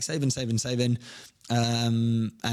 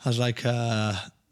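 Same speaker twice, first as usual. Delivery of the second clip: usual speaking voice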